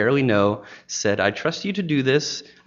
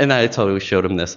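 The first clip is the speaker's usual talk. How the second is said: ordinary talk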